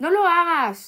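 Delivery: shrill, very high yell at full volume. The narrator calls out to someone who then ignores him, shouting. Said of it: "grité".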